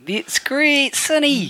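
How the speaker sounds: failed, very high-pitched Kiwi bro accent. Told he must talk in a kiwi bro accent, he tries: bad kiwi bro accent. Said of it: "I'll have to talk in a Kiwi bro accent".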